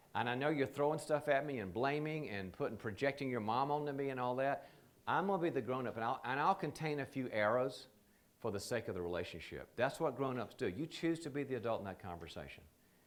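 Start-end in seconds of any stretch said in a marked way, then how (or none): none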